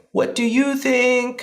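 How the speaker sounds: very high, pleading, drawn-out plaintive voice. Mimicking how people often ask about splitting trip costs, imitating a plaintive voice. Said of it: "in this very plaintive voice".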